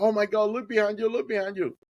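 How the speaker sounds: put-on very high-pitched scream. Retelling what a man on the boat screamed: imitating someone screaming. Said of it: "he started screaming like".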